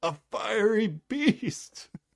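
sudden, blurted outcry, very high-pitched. Retelling a scene where a character suddenly shouts out: imitating a character shouting out. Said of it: "Emily just shouts out".

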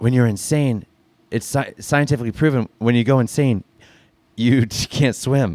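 hushed whisper. Voicing a character who whispers a warning to two others: whispering. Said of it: "whispers to the both of them".

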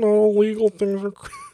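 very high, smitten, lovesick puppet frog voice. Asked how they did that voice, the speaker repeats the quote: Hermit the Frog talking to his crush. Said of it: "I call that Hermit the Frog talking to his crush".

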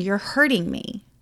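normal talking voice

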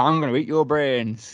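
really bad, terrible Yorkshire accent. Told to be an Ewok, the speaker plays one in a bad Yorkshire accent. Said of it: "Ewoks in my head just sound like a really bad like Yorkshire accent".

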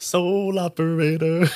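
lilting sing-song, rising and falling throughout. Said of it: "we were talking about this before the show, and we kept going".

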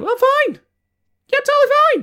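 very high, shrill, swooping, distressed voice. Retelling how Ali insists she's fine, imitating Ali's high-pitched voice. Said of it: "in that high-pitched voice that women use when they're not okay".

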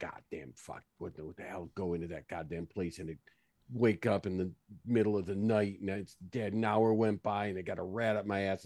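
angry, quiet mutter under the breath. Storming out after Lana in character, trying to be quiet: muttering under breath. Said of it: "I'm trying to be quiet, but I'm just like".

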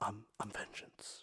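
deep, dark whisper. Comparing Batman actors' voices, imitating Pattinson: Pattinson Batman low whisper. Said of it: "just a low, ... Just a low, okay, dark whisper".

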